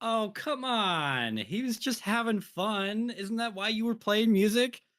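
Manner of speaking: sigh then loud, very high exasperated complaint. Asked what Indira wants to do, the player answers in character, annoyed. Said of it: "sigh very loudly and annoyed".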